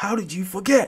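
high, shouted, screaming scolding tone. Retelling how a mate reacts to a forgotten snap: imitating a friend screaming. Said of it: "my mate would be screaming at me".

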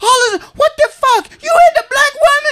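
mock, very high-pitched, outraged and angry. Retelling how the wife confronted him over a magazine: imitating the angry wife. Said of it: "And she's mad".

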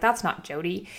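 ordinary delivery

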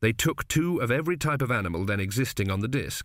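ordinary delivery, nothing marked

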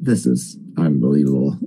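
very low, under-the-breath muttering to oneself. Retelling watching a film alone, imitating muttering to oneself. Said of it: "I was just muttering to myself".

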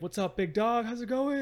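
all-excited, very high and loud. Retelling how a younger guy greeted him today, imitating an excited greeting. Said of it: "And he's all excited".

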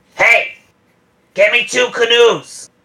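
high-pitched yell that carries far. Voicing a character calling over to the deckhands: yelling to deckhands. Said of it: "she just yells over to some of the deckhands".

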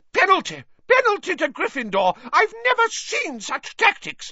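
shrill screeching shout, pitched very high. Reading a match scene aloud, voicing Madam Hooch's screeched penalty call. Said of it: "Madam Hooch screeched".

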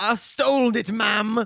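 very loud, very slow put-on Cockney accent. Retelling a book scene, voicing a character's confession: Cockney accent. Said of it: "Why is he Cockney?".

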